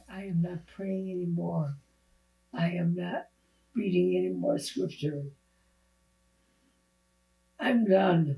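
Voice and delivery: acted-out crying speech, tearful voice. Retelling what the speaker told God after he left, retelling crying words. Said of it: "crying and saying this".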